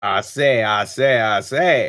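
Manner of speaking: cartoon rooster character voice. Designing a character's look, trying out a Foghorn Leghorn voice for him. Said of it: "talk in like the uh, Foghorn Leghorn ass voice".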